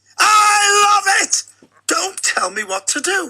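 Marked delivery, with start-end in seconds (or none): 0.2-1.5 raised, louder voice. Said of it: "I love raising my voice".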